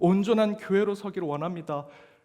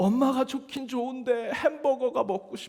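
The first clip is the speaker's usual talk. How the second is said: put-on high child's voice, sobbing through tears; 7 semitones higher than usual. Retelling a child begging his mother for a hamburger: imitating a child crying. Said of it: "막 울면서 얘기합니다".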